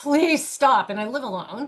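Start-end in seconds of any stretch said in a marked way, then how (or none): 0.0-0.9 mock agonized, desperate, pained screaming. Retelling holding on to the bed begging the pain to stop: imitating own past scream.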